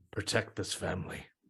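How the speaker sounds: soft whisper under the breath, to himself. Voicing a character who sears a holy symbol by a door: whispering to himself. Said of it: "just whispers to himself".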